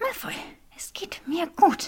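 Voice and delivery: very high, pressed through clenched, gritted teeth. A woman tries to pull her arm from the man holding it: through gritted teeth. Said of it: "presste Granger durch zusammengebissene Zähne hervor".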